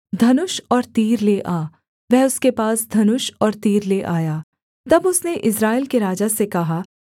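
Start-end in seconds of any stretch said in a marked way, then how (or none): none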